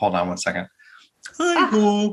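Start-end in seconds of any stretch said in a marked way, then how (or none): 1.4-2.1 put-on frog puppet voice. Doing a podcast intro on request: Kermit the Frog voice.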